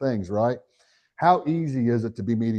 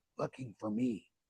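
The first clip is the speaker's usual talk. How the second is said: put-on child's whisper, much quieter; 15 dB quieter than usual. Telling an audience about a client's child, quoting the kid's whisper. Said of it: "and he's whispering".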